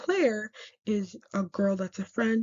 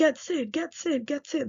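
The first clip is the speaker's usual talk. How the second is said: high-pitched, frantic, panicked, repeated yelling; 6 semitones higher than usual. Retelling a character locked in a fridge, imitating Carmy yelling.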